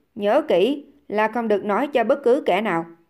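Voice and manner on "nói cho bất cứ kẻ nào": plain reading voice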